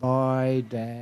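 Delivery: very sad, sorrowful, downcast voice. Father retelling his son's goodbye as he ran past, imitating a very sad voice. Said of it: "in a very sad voice".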